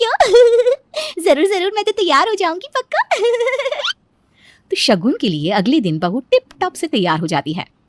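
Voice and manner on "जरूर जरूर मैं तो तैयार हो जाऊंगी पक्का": very high, laughing and sobbing at once. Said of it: "क्या बहू ऐसे ही हंसते हुए रोती है?".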